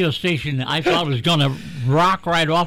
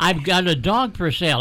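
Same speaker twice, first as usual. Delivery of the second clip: ordinary talk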